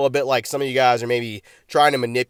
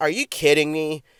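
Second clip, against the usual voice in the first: mock small, odd, disappointed little voice; 3 semitones higher than usual. Contrasting a winner's reaction with their own card wins: mock-disappointed weird little voice. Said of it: "in like kind of like a weird little voice, like I'm a little bit disappointed".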